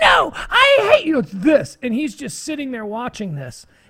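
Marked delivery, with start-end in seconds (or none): 0.0-1.2 put-on very high, very slow, drawn-out teenage screech. Recounting a God Bless America scene, speaker imitating a screaming teen at her parents. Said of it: "she's screaming at her parents".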